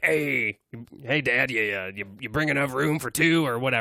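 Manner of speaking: heckling stand-up comedian style voice. Acting the Goblin comedian heckling the crowd: Goblin heckler comedian voice. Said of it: "heckler kinda comedians".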